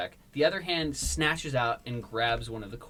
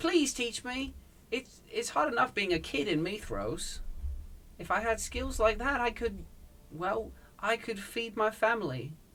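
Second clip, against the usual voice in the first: put-on young English accent, higher pitch; 9 semitones higher than usual. Voicing a kid begging to be taught, Tom Holland voice. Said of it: "you do a really good Tom Holland".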